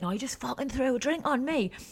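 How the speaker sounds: put-on high, fuming, full Geordie accent. Retelling what a furious woman said after a spilled drink: imitating a fuming geordie woman. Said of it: "she's fuming, full Geordie".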